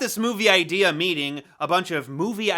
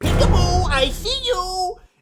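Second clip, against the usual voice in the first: put-on very high, slow, drawn-out, spooky child voice; 13 semitones higher, 4 dB louder than usual. Speaker describes an obscure early-nineties horror movie, doing the Peekaboo Boy voice. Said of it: "little spooky four-year-old demon boy that would go around saying".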